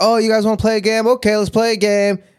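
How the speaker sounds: very high-pitched, friendly voice. Retelling Rainbow Dash inviting the others to play: imitating Rainbow Dash offering a game. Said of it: "she's like".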